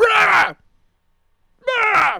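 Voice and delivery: loud high-pitched scream. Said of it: "she starts screaming at me".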